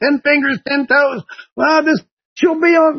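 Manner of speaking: put-on loud call. Retelling calling out to a young couple in a parking lot, retelling a yell. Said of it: "I'm yelling".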